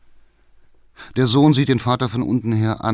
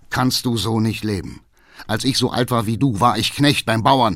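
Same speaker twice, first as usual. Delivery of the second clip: ordinary delivery, nothing marked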